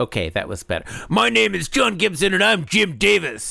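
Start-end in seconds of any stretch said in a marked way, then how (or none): 1.1-3.5 fake over-the-top anger, rough and pitched up. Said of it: "Now do an angry one".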